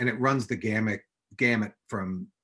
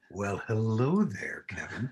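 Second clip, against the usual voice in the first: low, slow late-night radio voice. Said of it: "Are we doing our low radio voices?".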